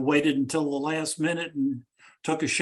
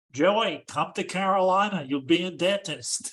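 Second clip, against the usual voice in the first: gentle, fond, lightly done put-on voice; 3 semitones higher than usual. Tell Michael how his uncle would come and talk to you, little impersonation of Uncle Harry. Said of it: "do a little impersonation".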